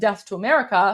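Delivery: ordinary talk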